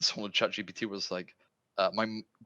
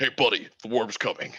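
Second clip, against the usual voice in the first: put-on huge-man voice; 5 dB louder than usual. Imagining a six-foot-five brick wall of a man talking to you, Duke Nukem-like brute voice. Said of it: "a fucking guy that's like six foot five, brick wall of a man".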